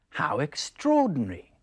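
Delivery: surprised, astonished. Showing how the newsreader's line sounds: surprised. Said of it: "He's surprised".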